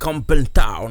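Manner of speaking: put-on English accent. French speaker reading about Australia says a town name: English accent. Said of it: "je vais prendre l'accent anglais".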